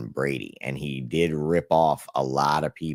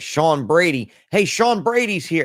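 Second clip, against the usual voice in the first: very high, loud, shouted calling out; 6 dB louder than usual. Speaker quotes a man who spotted him and called people over, retelling a yell. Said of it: "he's like yelling for people to come get me".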